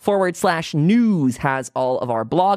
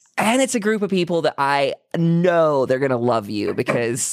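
ordinary talk, nothing marked

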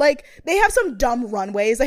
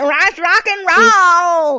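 put-on speech through clenched teeth, higher and louder; 6 semitones higher, 7 dB louder than usual. Imitating Meg from the show, imitating Meg talking through gritted teeth. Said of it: "she talks like her mouth is constantly closed".

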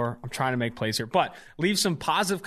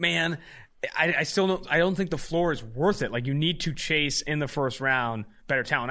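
ordinary talk, nothing marked

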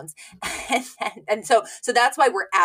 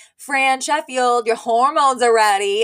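put-on loud announcer voice, higher and louder; 4 semitones higher, 6 dB louder than usual. Retelling a pharmacist calling over the microphone: imitating a loud announcement. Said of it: "He loudly announces over the microphone".

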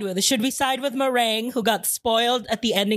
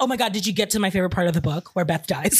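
mock excited gushing, lower pitch; 4 semitones lower than usual. Acting out an excited game character spoiling a book: imitating an excited character. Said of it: "Ketchup's so excited. She's like".

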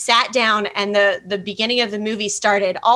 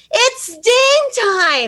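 put-on very high, swooping, thrilled yell at top of lungs; 13 semitones higher, 4 dB louder than usual. Retelling how their young daughter reacted in a movie theater, retelling a yell. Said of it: "throws her hands in the air and yells".

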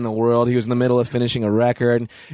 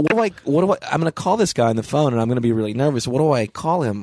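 ordinary talk

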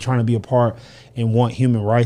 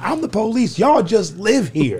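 shrill, very high-pitched screaming, pitched way up; 9 semitones higher than usual. Retelling a movie clip, imitating Denzel screaming. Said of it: "Denzel screaming".

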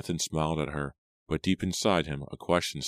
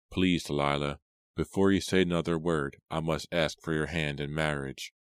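usual speaking voice

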